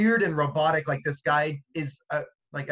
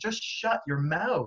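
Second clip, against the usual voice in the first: put-on exasperated, fed-up yelling outburst; 3 semitones higher, 3 dB quieter than usual. Recounting what they yelled at their TV while watching, retelling yelling at the TV. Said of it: "I was yelling at my T V like".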